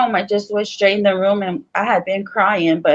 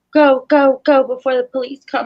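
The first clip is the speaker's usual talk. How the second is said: mock urgent yell, pitched higher; 5 semitones higher than usual. Retelling what the man hitting the speaker shouted, imitating urgent yelling. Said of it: "And he was like".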